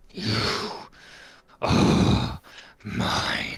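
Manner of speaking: snarled from the corner of the mouth, altered voice. Narrating a man staring at his reflection as another voice speaks from him, snarling, altered voice. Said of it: "you hear a voice which is slightly different to his".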